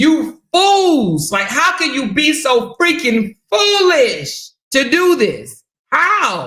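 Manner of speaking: impassioned, slow, swooping, dragging out "how". Retelling what a woman is saying to the accused: imitating a passionate scolding. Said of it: "you can hear the passion in her voice".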